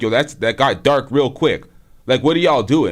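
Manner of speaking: ordinary delivery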